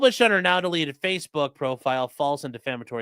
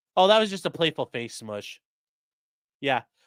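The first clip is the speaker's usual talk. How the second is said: ordinary delivery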